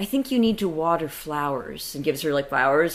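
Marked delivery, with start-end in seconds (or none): 0.0-1.9 acted, tender, gentle tone. Retelling Miyagi's words to the grandmother: imitating a tender tone. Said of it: "Miyagi says to her quite tenderly".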